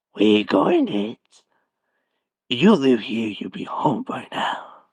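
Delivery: clown voice dropped low. Showing off a voice impression after saying watch this: Pennywise the Clown voice. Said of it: "I can also do the voice impression of Pennywise the Clown. Watch this".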